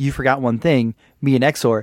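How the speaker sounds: ordinary talk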